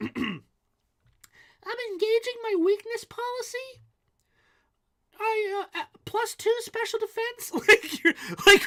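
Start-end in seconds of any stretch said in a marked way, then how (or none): 0.0-7.5 put-on very high, small child's voice. Mocking the idea of young kids playing competitive Pokemon, little kid voice. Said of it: "I gotta do like a kid voice".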